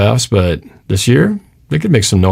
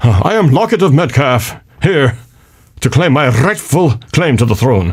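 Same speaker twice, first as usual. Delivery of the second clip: put-on stately British nobleman accent, pitched up; 5 semitones higher than usual. Joking that a question's wording sounds like a title: mock British nobleman. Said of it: "sounds like some kind of British or Scottish title".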